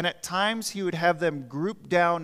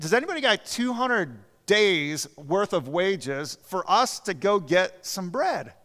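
play-acted, sarcastic, scoffing retort; 3 dB louder than usual. Retelling the disciples' reply to Jesus about buying bread: imitating a sarcastic retort. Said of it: "it's just kind of sarcasm here".

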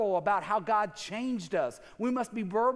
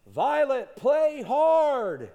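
big, loud, booming dad voice, hard stretched; 4 semitones higher, 6 dB louder than usual. Retelling calling out to his daughter violet from the sideline: big loud dad voice. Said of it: "in my big dad loud voice".

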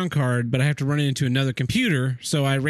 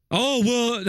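mocking impression, higher pitched voice; 9 semitones higher than usual. Ranting about people who defend Apple computers: put-on mocking voice of Apple buyers. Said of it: "I shouldn't use that voice".

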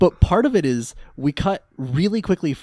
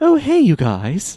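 loud, high, put-on posh British schoolboy accent; 8 semitones higher, 5 dB louder than usual. Retelling how he slips back into his school persona: posh British accent. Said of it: "falls back into his posh British accent".

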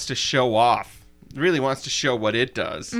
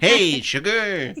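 put-on robot voice, pitched higher; 5 semitones higher, 3 dB louder than usual. Describing a man's clumsy sweet-talking, the speaker does the Short Circuit robot sweet-talk. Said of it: "like when the robot on Short Circuit".

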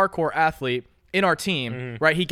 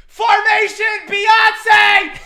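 shrill, very high shouted scream; 10 dB louder than usual. Retelling a line yelled over motorcycle engines in class: retelling a scream. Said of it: "I screamed over the motors".

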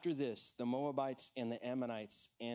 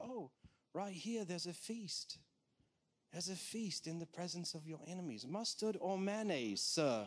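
put-on English accent, pitched higher; 6 semitones higher than usual. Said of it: "I'm gonna try to copy it".

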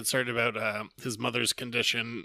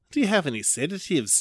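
put-on New Zealand accent, high-pitched; 6 semitones higher, 4 dB louder than usual. Retelling a zombie story where he asks a pharmacist, New Zealand accent. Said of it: "I'm doing a fucking New Zealand accent".

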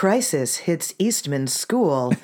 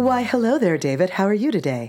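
put-on radio announcer voice, mock radio host delivery; 4 semitones higher than usual. Returning a greeting at the start of the show: put-on radio voice. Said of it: "We're using our radio voices".

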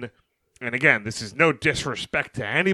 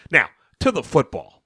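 ordinary delivery

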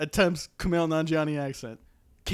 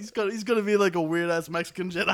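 normal talking voice

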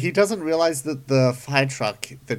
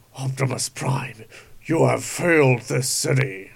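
put-on villain voice. Riffing on a police chase after Oliver Queen, a speaker tries a Deathstroke voice. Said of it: "Trying to go for a Deathstroke voice".

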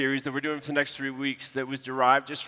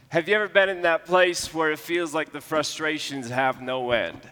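ordinary delivery

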